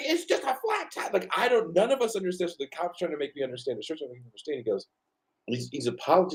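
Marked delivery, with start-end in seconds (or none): 0.1-1.1 put-on, very high-pitched screaming. Retelling a police stop, imitating own scream at officers: imitating own scream. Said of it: "I was just screaming".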